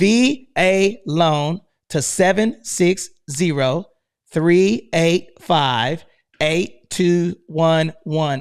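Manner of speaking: slowed-down delivery. Repeating a text number for listeners, said slowly. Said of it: "Let me say it slow".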